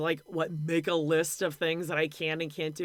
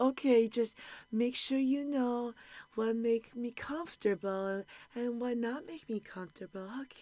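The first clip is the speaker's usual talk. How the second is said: put-on sweet, high-pitched, cutesy baby talk; 6 semitones higher, 4 dB quieter than usual. Retelling what a man said to a woman, mocking baby talk. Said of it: "I'm not buying this baby talk shit".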